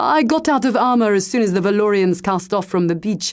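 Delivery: ordinary delivery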